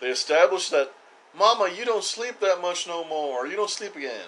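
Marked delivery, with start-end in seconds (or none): 1.4-4.3 put-on country accent, slightly higher pitch. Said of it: "I'm giving her, like, a country accent".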